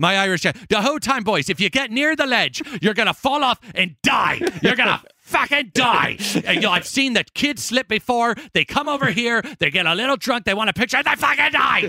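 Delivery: put-on Irish accent, very high-pitched. Asked to do the accent, retelling a man's warnings to the boys, irish accent. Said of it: "my Irish".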